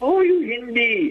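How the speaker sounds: mock, very high, taunting, mocking jeer. Retelling how taxi drivers taunted them, the speaker retells a mocking taunt.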